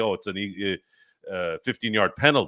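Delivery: normal talking voice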